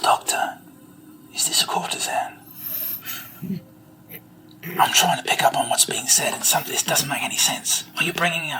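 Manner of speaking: hushed, secretive whisper. A character leans in to the doctor, whispering. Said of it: "He leans into you and whispers".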